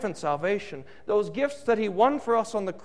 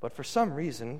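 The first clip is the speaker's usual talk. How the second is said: ordinary talk, nothing marked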